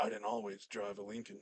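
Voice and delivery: breathy, hushed, almost whispered commercial voice. Imitating an actor's magical voice from his car commercials: Matthew McConaughey impression. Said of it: "That sounds like, um, uh, what's his name? Nicolas Cage".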